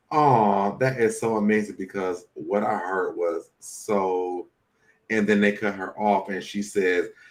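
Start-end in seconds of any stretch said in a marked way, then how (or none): none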